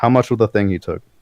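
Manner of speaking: ordinary talk, nothing marked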